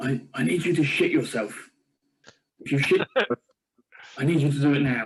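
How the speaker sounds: close, private, hushed half-whisper. A player describes their character going up to a man on one knee, half-whispering in his ear. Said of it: "I'm going to whisper in his ear".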